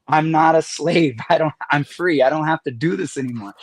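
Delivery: imitated tearful crying. Speaker recalls speaking out loud in church, retelling crying out in church. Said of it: "I'm like crying".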